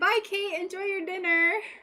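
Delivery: high-pitched shout. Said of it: "Why are you yelling?".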